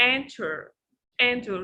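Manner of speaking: enter stressed on first syllable. Showing a class where the word's stress falls: stress on first syllable of enter. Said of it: "the first syllable is strong".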